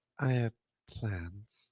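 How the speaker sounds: deadpan, listless, very quiet, low-energy flat delivery. Describing how Christy Hemme reacted, imitating Christy Hemme with low energy. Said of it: "you would have thought she could match that energy".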